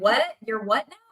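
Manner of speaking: mock incredulous, doubting, skeptical tone. Retelling how a coworker first reacted to the diet: imitating a skeptical coworker. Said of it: "she was totally skeptical".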